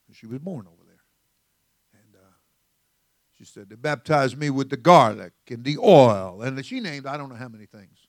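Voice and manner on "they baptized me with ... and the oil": very loud put-on Jamaican accent. Retelling what the wife's mother said about baptism: imitating mother-in-law's accent. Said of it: "Got that accent going on there".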